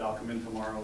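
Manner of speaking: plain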